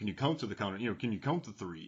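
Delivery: soft, dry, sarcastic jab. Describing a TV scene where Bruce Willis answers a countdown, mock-sarcastic Bruce Willis line. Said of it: "Like that kind of sarcasm".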